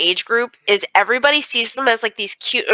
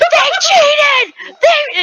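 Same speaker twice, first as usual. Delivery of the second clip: put-on aggressive boy-like scream, higher and louder; 5 dB louder than usual. Retelling how a boy yelled at girls who won in P E: imitating a boy screaming aggressively. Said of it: "screaming so aggressively at them".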